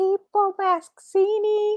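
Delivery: very high-pitched attempt at Liverpool Scouse accent. Asked to repeat a name after another speaker: Scouse accent. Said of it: "but in a Scouse accent".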